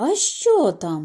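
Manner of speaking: frightened, startled. Narrator reading the mother's question as her daughter wakes her, startled awake, frightened. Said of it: "жахнулася зо сну мати".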